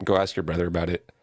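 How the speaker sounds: plain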